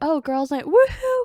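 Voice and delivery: mock gushing, loud, high, excited whoop. Comparing women and guys, the speaker mimics the women: imitating excited women. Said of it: "women are just more excited about".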